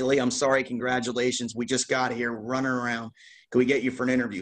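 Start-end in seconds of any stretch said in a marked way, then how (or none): none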